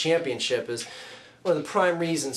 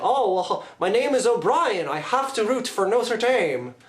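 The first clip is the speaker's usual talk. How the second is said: terrible put-on Irish accent, pitched up; 7 semitones higher than usual. Mocking fans who root for Notre Dame by surname, terrible Irish accent. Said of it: "It's my terrible Irish accent".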